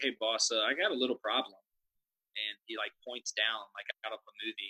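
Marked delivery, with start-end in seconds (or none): 0.0-1.6 very calm, matter-of-fact understatement. Retelling how an employee came up to the boss: imitating someone speaking very calmly. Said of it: "very calmly".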